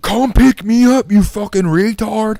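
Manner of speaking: put-on high, drawn-out scream at top of lungs. Telling a story about a woman demanding to be picked up, retelling a scream. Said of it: "She's screaming at the top of her lungs".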